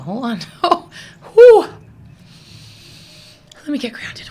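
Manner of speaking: very loud, swooping, overcome emotional outburst. Speaker swept with emotions, pausing to get grounded, emotional. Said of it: "I'm getting emotional".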